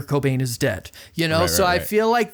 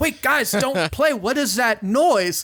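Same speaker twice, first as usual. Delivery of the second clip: mock irritated, angry, pitched-up, mounting anger; 7 semitones higher than usual. Retelling how a man halts a band over a noise they keep making: retelling an angry outburst. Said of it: "keeps getting angrier and angrier".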